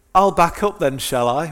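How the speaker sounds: loud, high-pitched, sarcastic shout. Retelling shouting out the car window at a reversing driver, retelling a sarcastic shout. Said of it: "just sort of a bit of sarcasm".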